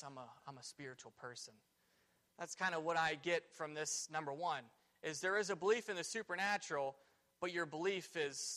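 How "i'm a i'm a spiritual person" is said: put-on old lady low whisper, much quieter. Speaker imagining an old lady asked about her religious beliefs, low whisper. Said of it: "she just kind of whispers to you in a low voice".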